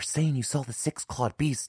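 high, hushed whisper under the breath. A narrator reads a character passing on rumors about a beast, whispered. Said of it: "he whispered".

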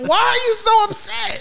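high mocking cartoon squeak.

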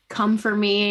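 plain

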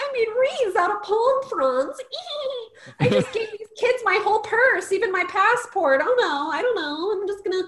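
put-on very high-pitched, childish little-kid voice. Retelling how a movie character behaves, imitating a childish manner. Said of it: "she starts acting like a little child".

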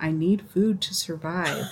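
soft half-whisper, close to the ear. Retelling what a six-year-old half-whispers when he wants a snack: imitating a child half-whispering. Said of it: "whispers in my ear".

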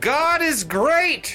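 top-of-the-lungs, full-throated scream, very high. A player announces their character's move before activating Death Nova: screaming at the top of lungs. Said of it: "scream at the top of my lungs".

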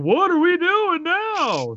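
snarky, very high, drawn-out, swooping delivery. Describing a sidekick character's role in a film: Samuel L. Jackson impression. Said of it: "That was my Samuel L. Jackson impression".

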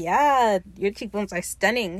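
plain

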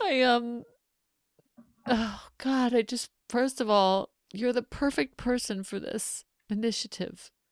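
sobbing while talking. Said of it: "I'm ugly crying right now".

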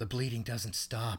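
dead-level, zero-emotion, flat monotone deadpan delivery. Recapping a match and a remark made on it, imitating Marvez's zero-emotion voice. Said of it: "with zero emotion".

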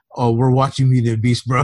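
put-on manly voice. Retelling an answer to a brother about plans: imitating a manly voice. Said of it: "you sounded so manly saying that".

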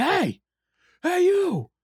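wild, very high, swooping shrieking scream. Telling about a man on the street who ran at someone, retelling his scream. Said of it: "starts screaming at him like".

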